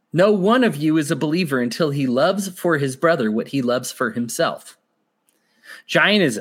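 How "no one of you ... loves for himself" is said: usual speaking voice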